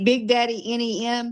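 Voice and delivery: normal talking voice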